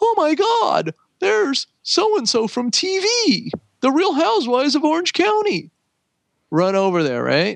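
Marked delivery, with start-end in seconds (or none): 0.0-5.7 put-on very high, giddy, starstruck gushing. Imitating fans who get excited when someone famous shows up: imitating excited fans. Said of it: "They get excited when anybody famous".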